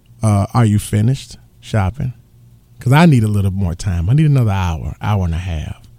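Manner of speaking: warmest possible tone, low and warm voice. Retelling what she would say to him while they shopped, quoting her warmest voice. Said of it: "she'd say to me in the warmest voice".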